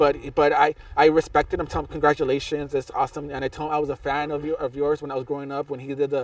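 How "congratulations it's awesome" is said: normal talking voice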